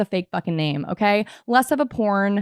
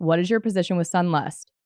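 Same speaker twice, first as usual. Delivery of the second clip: plain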